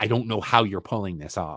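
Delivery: mock-tender, loving, respectful, endearing tone. Quoting what a man told Tom, retelling in a loving, respectful tone. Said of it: "he said it in a very loving, very respectful".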